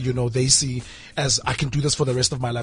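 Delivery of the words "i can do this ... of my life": normal talking voice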